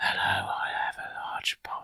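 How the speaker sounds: soft, very quiet, barely audible hushed whisper. Testing a listening gadget after being asked to whisper: whispering.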